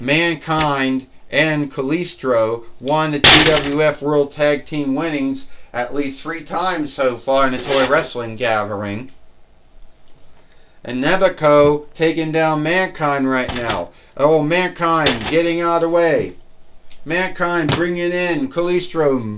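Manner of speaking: ordinary talk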